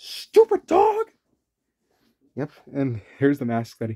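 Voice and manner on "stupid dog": put-on very high, shrill, loud, nasty old-man voice. Describing a cartoon's mean old man: imitating Eustace. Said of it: "the mean old man, Eustace, that says".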